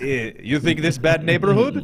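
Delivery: clumsy, lousy, unconvincing put-on Russian accent. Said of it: "It's not very good".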